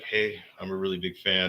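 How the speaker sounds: usual speaking voice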